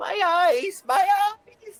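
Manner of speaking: put-on high, loud wail like a frail old lady. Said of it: "an elderly lady now leaning on the bridge going like".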